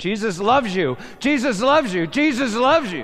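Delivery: loud, high scream. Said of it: "He started screaming".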